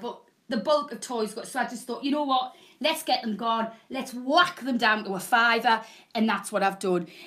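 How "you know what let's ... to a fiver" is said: usual speaking voice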